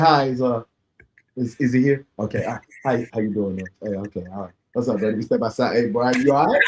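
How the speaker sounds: low, courteous, polite, on-best-behavior tone. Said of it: "I'm not gonna come up there, thugging".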